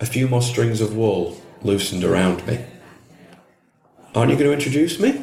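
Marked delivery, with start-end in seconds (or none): 4.1-5.2 quick, high-pitched, anxious, nervous, rattled off. Reading a story, she asks a question while trying to be friendly, nervous. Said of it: "she asked nervously".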